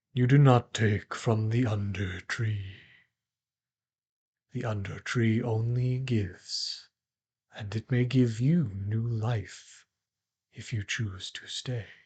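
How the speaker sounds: deep, grave, solemn, somber voice. Game master voicing a voice the players hear in their minds, deep, somber voice. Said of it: "a deep, somber voice in your mind".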